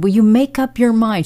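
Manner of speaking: exasperated, furious, high angry shout. Retelling how a lady screamed at the speaker across a parking lot: retelling an angry scream. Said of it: "She's screaming this across the parking lot".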